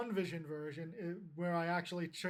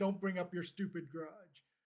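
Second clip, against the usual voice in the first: usual speaking voice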